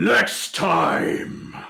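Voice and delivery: rasping, rough, creaky dragon growl. Narrating a dragon as the players flee it: booming dragon voice. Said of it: "in a booming voice".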